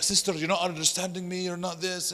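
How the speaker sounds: heated, high-pitched mock yelling. Retelling a heated debate, a man arguing with a sister: imitating someone yelling. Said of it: "he's just yelling at her".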